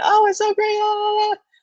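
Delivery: very high, fake-cheerful, overly happy gush. Mimicking recruiters who try to sound overly happy: high-pitched, fake-cheerful voice. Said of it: "try to sound overly happy ... that type of voice pitch".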